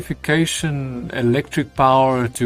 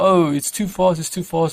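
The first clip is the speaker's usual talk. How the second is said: mild, held-back, put-on yell-like complaint; 4 semitones higher than usual. Speaker repeats what he keeps saying while catching up, retelling a yell. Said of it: "he's literally yelling".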